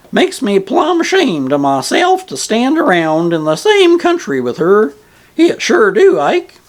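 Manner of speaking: squeaky, emphatic voice. Reading aloud an old ferryman's reply: squeaky, emphatic voice. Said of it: "with all the emphasis possible in his squeaky voice".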